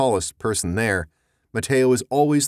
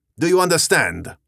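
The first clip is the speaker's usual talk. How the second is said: sharp, barked, pitched-up delivery; 7 semitones higher, 3 dB louder than usual. A narrator reads an officer arresting a father for desertion, barked. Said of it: "The officer barked".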